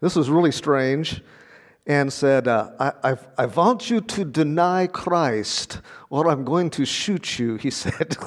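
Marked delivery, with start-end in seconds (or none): 2.5-7.6 put-on Ukrainian accent, much slower. Retelling what a guard said while holding a gun to the speaker's head, Ukrainian accent. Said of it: "that's my best Ukrainian accent".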